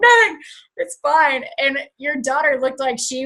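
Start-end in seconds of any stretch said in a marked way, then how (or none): 0.0-1.4 high, sobbing, crying through the words. Speaker retells answering her daughter Sadie while crying: imitating own sobbing. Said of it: "I was like sobbing".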